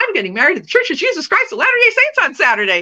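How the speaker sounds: put-on, bubbly, effervescent, quick, swooping. Retelling a phone call with a lady: imitating her own bubbly tone. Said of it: "And I'm all bubbly".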